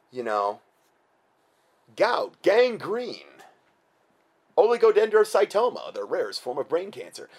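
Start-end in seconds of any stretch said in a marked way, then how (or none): 2.0-7.3 nice, simpering put-on announcer voice, pitched up. Describing a drug commercial, the speaker voices its side-effect list: simpering NPR voice. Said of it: "in this real nice simpering NPR voice".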